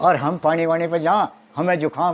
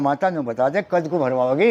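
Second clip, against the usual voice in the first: ordinary delivery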